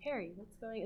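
calm, unruffled, hushed, very quiet voice. Comparing a book scene to the movie, acting out the book's version: retelling a calm line. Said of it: "he says calmly".

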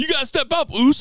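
very high, insistent, pushed-up voice. Retelling a wrestling segment where someone mimicked another wrestler: Jey Uso impression. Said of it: "doing the impression of Jey Uso going".

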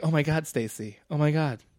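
put-on soft girl's voice. Describing a girl going back to her friends, impression of a girl. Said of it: "Great impression of whoever this is".

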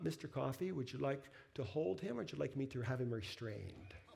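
mock sugary, really sweet, overly nice, polite voice. Retelling a story, the speaker quotes a woman addressing him, imitating her really sweet voice. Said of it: "she says in this really sweet voice".

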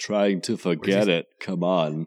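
bad, clumsy Austrian accent, muscleman voice. Retelling Dutch's reply to Pancho, do a terrible Arnold impression. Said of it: "That was my terrible Arnold".

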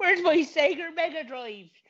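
put-on silly West Country accent. Acting out a silly complaint about someone who borrowed a Sega Mega Drive, in a put-on West Country accent. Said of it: "Go towards a West Country accent".

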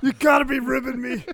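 very loud, high-pitched, confrontational yelling. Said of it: "Twice he yells".

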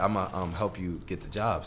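ordinary delivery

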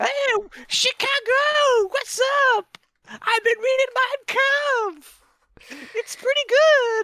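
very high, loud, belted rock-frontman voice. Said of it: "That's like your Aerosmith voice".

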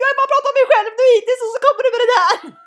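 mock whiny wailing. Retelling how her sister reacted to hearing she'd be an aunt, mock wailing. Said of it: "Och så bara såhär asbön".

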